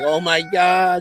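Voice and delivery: mock frantic, high, panicked screaming cry. Retelling a man's reaction during sex, imitating someone screaming. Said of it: "And he's like screaming, screaming".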